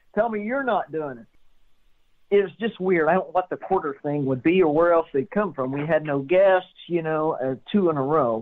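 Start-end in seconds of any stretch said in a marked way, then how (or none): 0.1-1.2 mock, toned-down, mild yell, pitched high. Retelling what the speaker yelled at the wife when she came in mad: retelling own yell. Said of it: "I'm yelling at her".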